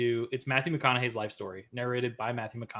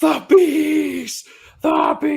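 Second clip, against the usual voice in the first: shrill, very high, very loud, dragged-out screaming; 14 dB louder than usual. Describing movie clips of Nicolas Cage: Nicolas Cage screaming. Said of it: "He's just fucking screaming".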